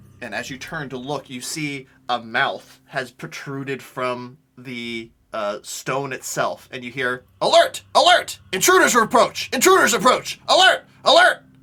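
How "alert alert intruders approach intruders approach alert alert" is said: very loud, high, blaring alarm-like voice. Game master voicing a stone mouth warning of intruders, very loud alarm call. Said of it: "Very loudly".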